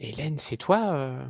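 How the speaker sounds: hushed whisper. In a role-play scene, a player's character speaks to Hélène, whispering. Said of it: "Je je chuchote".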